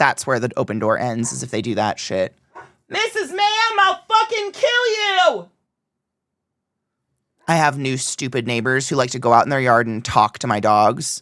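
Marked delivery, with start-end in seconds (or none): 2.9-5.5 very high, absurd, drawn-out acted shouting. Retelling what gets yelled at the dogs in the yard: retelling a yell. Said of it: "whenever I yell things like that".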